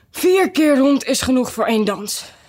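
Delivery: out of breath. Narrator reading one of the dancers after the dance, panting. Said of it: "hijgde Fiedeldij".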